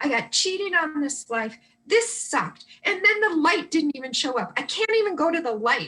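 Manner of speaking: put-on fed-up, frustrated, angry ranting. Retelling a spirit's complaint while he kicks the washer, imitating George frustrated and angry. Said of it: "he was frustrated and angry about that".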